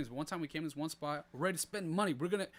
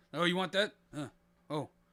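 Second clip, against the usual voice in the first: mock nasty, rude put-on attitude; 4 dB louder than usual. Retelling how workers at a shop treated customers: imitating a rude, nasty worker. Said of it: "What kind of accent is that?".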